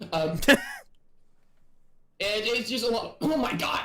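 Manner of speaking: choking, talking past something caught in throat. Talking with another person while choking on chicken. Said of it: "I'm choking on chicken".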